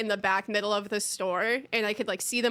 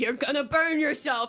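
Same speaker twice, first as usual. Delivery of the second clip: mock light scolding yell, pitched up; 5 semitones higher than usual. Retelling how the ambulance crew kept warning them: imitating someone yelling. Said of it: "they kept yelling at me".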